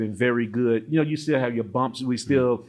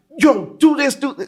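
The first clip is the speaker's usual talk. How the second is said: loud high-pitched shouting; 14 semitones higher, 8 dB louder than usual. Explaining what shouting means in America versus here, retelling American-style shouting. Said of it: "that's shouting".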